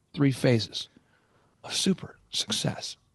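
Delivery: play-acted, whispery, breathy, grandly theatrical slow drawl. Retelling what an advisor said, imitating a very theatrical way of talking. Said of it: "he talks like that, by the way, very theatrical".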